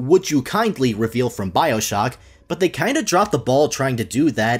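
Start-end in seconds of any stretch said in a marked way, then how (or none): none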